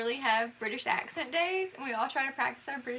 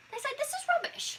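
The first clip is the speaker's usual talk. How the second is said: put-on British accent, very high-pitched; 14 semitones higher than usual. Joking about a phrase heard on Great British Bake Off, Great British Bake Off accent. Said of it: "I'm back to being an Alabamian".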